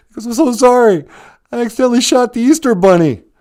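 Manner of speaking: very high, loud fake crying and sobbing. Speaker retells a man apologizing to him at age four, imitating fake crying. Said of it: "He's fake crying".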